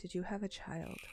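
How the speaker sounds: hushed, whispered speech. Turning to another character over the shoulder to ask a question: whispering. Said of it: "I just whisper to her".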